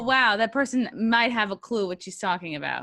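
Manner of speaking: ordinary delivery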